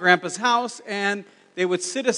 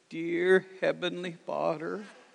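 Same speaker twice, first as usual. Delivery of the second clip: put-on slow, halting, hushed old man voice, words spaced; 2 semitones lower, 8 dB quieter than usual. Retelling how a very old great-grandfather prayed: imitating great-grandpa Riggin's halting voice. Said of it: "he had this slow, halting voice".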